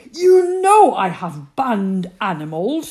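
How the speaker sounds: very loud, enraged, furious yell. Narrating a story, the queen shouting at Tasha about the kangaroo, yelling. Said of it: "she yelled".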